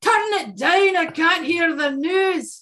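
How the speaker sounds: put-on very high-pitched Scottish accent, woman's voice. Retelling their mom telling them to turn it down, imitating her Scottish accent. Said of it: "Except she's Scottish. She'll be".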